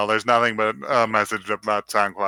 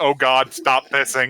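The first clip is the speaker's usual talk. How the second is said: put-on, mock scream; 3 semitones higher than usual. Suggesting a clip for a channel trailer: imitating Emma screaming. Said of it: "Emma screaming".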